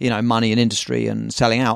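plain

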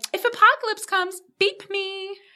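strange, silly, very high put-on voice. Quoting a character's line from the show: odd put-on voice. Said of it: "I don't know what that voice was".

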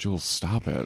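very quiet, hushed, said under the breath. Retelling what one woman quietly said to another while the guys looked on. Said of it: "Cleo quietly goes".

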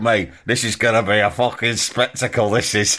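mock muttering. Voicing the hobo's private reaction to the frisbee plan: imitating someone muttering. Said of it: "he's muttering to himself".

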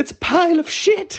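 mock shrill, very high, full-volume shriek. Retelling a woman's reaction to a box: retelling a shout at top of voice. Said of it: "at the top of her voice".

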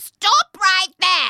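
very high, very loud, raspy, shrill witch voice. Reading a story aloud, voicing an old woman in the doorway, raspy old woman voice. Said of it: "So I need a raspy old womany voice".

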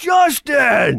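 put-on happy drunk calling out. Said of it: "happy go, happy drunk".

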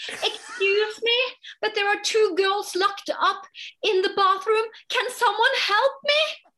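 put-on very high shouted call. Retelling shouting out in the room during a show, retelling shouting out. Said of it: "I'm shouting out in the room".

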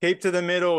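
very high, shrill yell. Retelling what a bike rider with a flag called out: imitating someone yelling. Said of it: "He's yelling".

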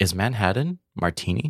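put-on heavy European accent with broken English. Retelling a guest's question about cocktails: imitating a heavy European accent, broken English. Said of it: "in a very, like, broken English, heavy accented way".

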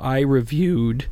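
voice cracking. Host recalling reviewing a Staten Island beer on the show, voice cracking. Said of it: "my voice cracked there a little bit".

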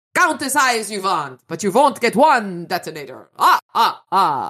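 put-on Transylvanian accent. Reading a scene where the narrator taunts a gunman: puppet's Transylvanian accent. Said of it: "I threw on a puppet's Transylvanian accent".

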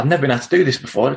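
defensive, prickly, protesting retort. Retelling snapping back at family about drinking: imitating a defensive tone. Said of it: "I'd get all defensive and I'd be like".

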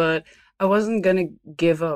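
normal talking voice

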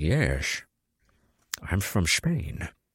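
put-on slow, drawn-out Scottish accent. Joking about a Spanish role said in a Scottish accent: Sean Connery impression. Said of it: "he still has a Scottish accent".

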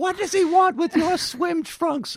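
shrill, very high, loud yell. Describing a sitcom scene, the speaker voices Frank's wife yelling at him: retelling a yell. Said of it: "his wife yells at him like".

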